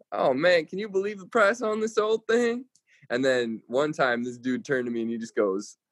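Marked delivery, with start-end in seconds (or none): 0.1-2.6 put-on laid-on Southern accent, pitched way up high. Retelling approaching farmers while selling tractors, in a put-on southern accent. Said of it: "with a Southern accent".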